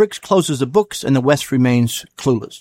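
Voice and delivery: ordinary delivery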